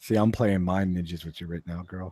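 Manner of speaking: low-pitched voice. Playfully teasing another speaker, voice dropped low. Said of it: "You notice how his voice got all low?".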